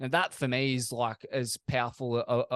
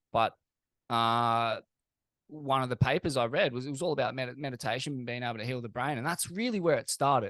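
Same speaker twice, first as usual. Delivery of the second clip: usual speaking voice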